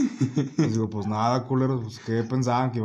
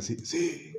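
raspy, croaky, hoarse, rough voice; 4 semitones higher, 8 dB quieter than usual. Retelling what a school teacher replied: imitating a hoarse voice. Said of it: "Hablaba como que ronco la maestra".

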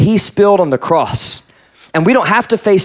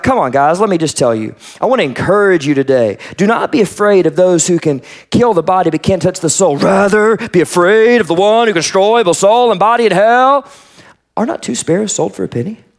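casual, relaxed, put-on encouraging voice. Reading a scripture passage aloud as a casual imitation of Jesus. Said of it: "here's how I read it".

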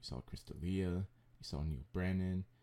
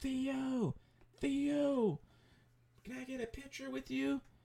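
put-on, very high, stretched-out drunken hollering. Retelling how a drunk woman yelled to theo for a picture, retelling a woman yelling. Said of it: "just starts yelling".

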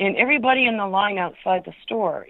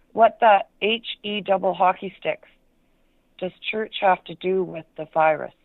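usual speaking voice

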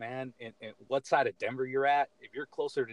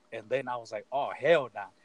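ordinary talk, nothing marked

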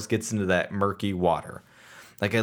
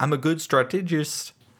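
attempted New Zealand accent, pitched up; 5 semitones higher than usual. Recapping a show scene, quoting Omega, in an Omega impression with New Zealand accent. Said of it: "trying to sound like a New Zealander".

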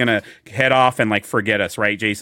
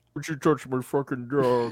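creepy put-on killer voice, quieter; 7 dB quieter than usual. Joking with the others about Silence of the Lambs: Silence of the Lambs killer impression. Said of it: "you sound just like him".

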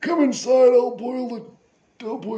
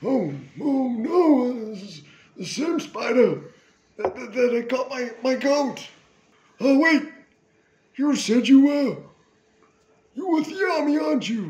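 put-on grandpa voice with a drawn-out "no". Voicing a grandpa talking to his granddaughter: grandpa character voice. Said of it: "And he goes".

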